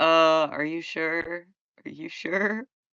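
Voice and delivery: put-on voice sounding doubtful. Retelling how a character sounded in a scene: doubtful Optimus voice. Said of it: "He sounds so doubtful".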